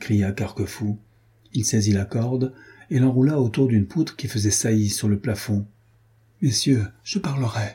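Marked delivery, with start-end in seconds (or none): 6.4-7.7 frantic, beaten-down murmur, utterly undone. Master Hans, unable to rise from his stool, gives in with a distraught murmur. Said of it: "murmura maître Hans éperdu".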